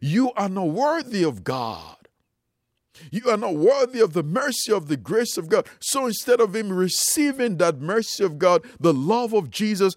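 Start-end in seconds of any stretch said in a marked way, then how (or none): 0.0-5.7 accusing, condemning, accusatory voice. Speaking of a man's sins, acting out the enemy's words: mock-accusatory voice. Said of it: "the accusatory voice of the enemy said".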